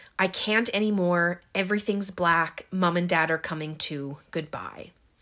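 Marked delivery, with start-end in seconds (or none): none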